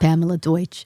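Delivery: put-on older woman's Long Island accent. Showing how a grandmother from Long Island talks: imitating Pamela Deutsch's Long Island accent. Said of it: "She talks like this".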